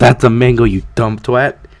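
ordinary talk

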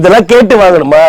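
ordinary talk

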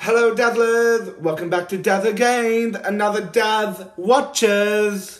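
belted out at full blast, very loud. Imitating a favorite YouTuber's channel greeting: Daz impression. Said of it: "this is my, Daz impression".

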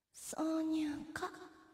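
sultry put-on voice. The director asks for one more take, in a sexy voice. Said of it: "セクシーな声でお願いします".

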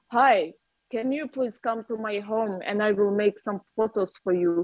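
put-on bright, heavy, strong Russian accent. Retelling inviting a woman to take photos at home, in a bright Russian accent. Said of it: "such a, like, you know, bright Russian accent".

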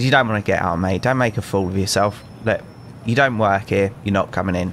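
plain

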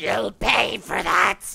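very loud, raw, rough screeching. Hit in the back by a fireball while changing forms, Elfer screeches out. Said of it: "She screeches out".

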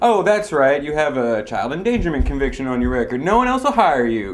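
mocking, sarcastic, needling tone with swooping pitch. Telling a man who says the job sucks that he can quit: sarcastic jab. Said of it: "Just using sarcasm".

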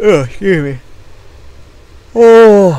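loud, high yawn breaking through mid-sentence.

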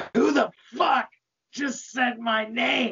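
angry yelling in a demon voice. Voicing Satan, who grows ten feet taller and is engulfed in flames: angry yell. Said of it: "He angrily yells".

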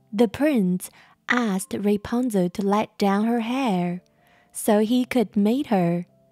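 plain reading voice

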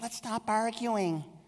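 mock whiny namby-pamby voice, very high. Mimicking what the world says about confronting an uncle, in a mock mamby-pamby voice. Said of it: "I do that mamby-pamby voice".

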